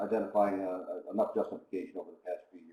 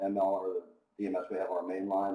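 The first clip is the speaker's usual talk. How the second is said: normal talking voice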